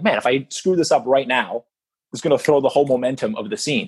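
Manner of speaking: ordinary talk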